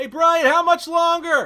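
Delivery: shouting. Asking someone right next to you how much longer: yelling. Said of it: "why are you yelling at me?".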